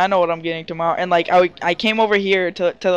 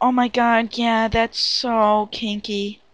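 slow, faked girlish voice; 4 semitones higher than usual. Retelling own reply to him, in a put-on girly voice. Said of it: "I got mixed up with the girl voice".

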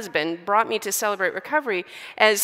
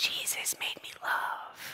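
soft, slow, hushed, drawn-out whispering. Retelling what a woman at the table whispered: imitating someone whispering. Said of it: "she was whispering this name".

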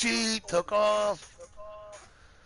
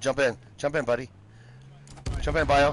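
plain

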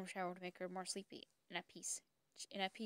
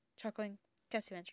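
plain reading voice

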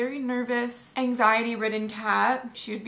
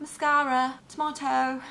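English accent, higher pitch; 2 semitones higher than usual. Saying words the other speaker called fun to say, in an English accent. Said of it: "Mascara is another really fun word to say in an English accent".

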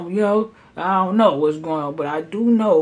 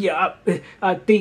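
mock, imitated stuttering speech. Retelling how someone answered a question about leaving the store: imitating someone stuttering. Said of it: "he starts stuttering and shit like".

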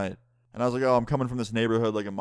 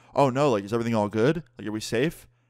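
put-on feigned worried tone. Retelling how a friend fooled a cop: imitating fake concern. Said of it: "puts on the most bullshit concerned face ever and goes".

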